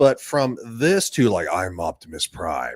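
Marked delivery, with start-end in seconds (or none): 1.5-2.8 voice dropped low, deep and heavy. Showing how a voice role should sound: deeper Optimus Prime voice. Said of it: "just make it deeper".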